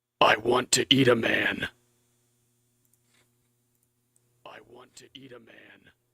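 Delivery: really scary, frightening horse voice. Recording a line for a horse character, in a really scary voice. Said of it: "the horse needs like a really scary voice".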